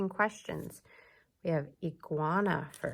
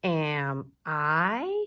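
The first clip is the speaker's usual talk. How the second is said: pitch rises on the final "I"; 6 dB louder than usual. Showing how a question sounds in English, voice rising at the end on I. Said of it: "Do you hear how my voice goes up a little bit at the end?".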